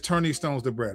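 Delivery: plain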